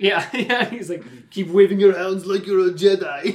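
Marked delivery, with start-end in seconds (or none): 1.3-3.4 put-on loud, raised Austrian accent. Quoting a movie character's line while chatting about Star Wars, Arnold Schwarzenegger impression. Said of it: "That was like Arnold Schwarzenegger".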